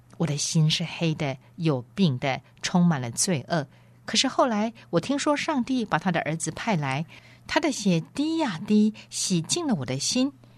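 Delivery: ordinary delivery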